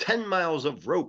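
ordinary delivery

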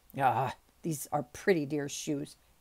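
muttered under breath. A servant getting his shoes back after court: muttered. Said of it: "he muttered".

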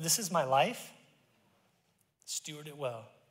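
soft, tearful, choked-up voice. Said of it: "I'm just like in tears going".

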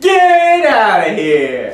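slow, loud delivery with a laugh. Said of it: "I said".

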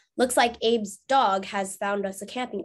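ordinary delivery

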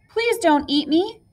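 high, timid, frightened, pleading voice. Middle Billy Goat Gruff pleading with the troll on the bridge, afraid. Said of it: "Middle Billy Goat Gruff was afraid".

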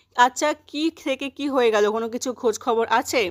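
ordinary talk, nothing marked

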